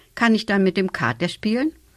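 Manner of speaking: plain reading voice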